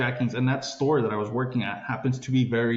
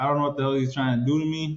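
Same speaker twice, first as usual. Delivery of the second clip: usual speaking voice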